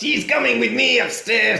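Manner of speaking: very high, raspy, rough villain voice. Retelling a scene, the speaker quotes the bad guy in a baddie voice. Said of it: "That's going to be my baddie voice".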